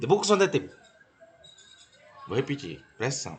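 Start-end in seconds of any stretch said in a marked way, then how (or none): 0.0-0.7 very fast, rushed, slurred, blurred together. Testing whether a learner can follow spoken English: very fast and slurred. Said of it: "Eu vou falar bem rápido e bem embaçado".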